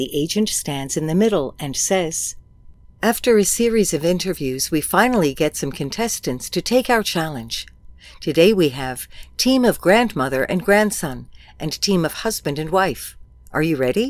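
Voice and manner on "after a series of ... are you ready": ordinary talk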